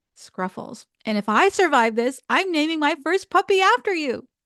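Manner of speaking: loud, scrappy but lovable golden retriever voice. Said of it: "a scrappy but lovable golden retriever".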